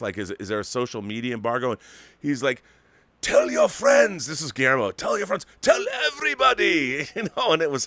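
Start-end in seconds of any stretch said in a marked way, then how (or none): 3.2-7.1 put-on loud, very high, swooping, poorly done Mexican accent. Retelling his answer in the lobby after the movie, in a bad Mexican accent imitating Guillermo. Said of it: "that's not a very good Mexican accent".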